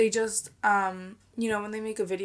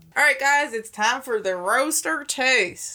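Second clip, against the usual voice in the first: fake, put-on country accent; 3 semitones higher than usual. Introducing the roaster taste segment to the guys, in a put-on country accent. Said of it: "I don't know why I did a country accent".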